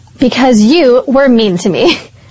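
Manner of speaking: ordinary talk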